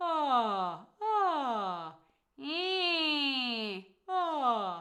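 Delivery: wide-open yawning vowels, very drawn out and slow. Speaker demonstrating the yawn sound for listeners, open yawning sound. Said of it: "the yawny sound is quite open".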